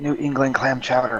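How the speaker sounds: whispering. Speaking the password to a talking door in character: whisper. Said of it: "I whisper to him".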